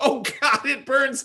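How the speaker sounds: mock, very high, pained shriek. Telling of spilling hot coffee on a helicopter pilot, retelling a scream of pain. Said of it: "He's screaming".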